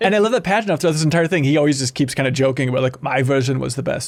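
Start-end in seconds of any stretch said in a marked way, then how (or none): 3.0-4.1 bad, terrible put-on Russian accent, low. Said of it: "that's a terrible Russian accent".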